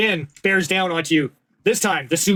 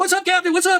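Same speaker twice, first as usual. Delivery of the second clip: very high-pitched, shrill, loud shout; 12 semitones higher than usual. As their captain is attacked, two crew members shout out to him: shouting. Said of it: "You hear shouts out from Terry and Kay".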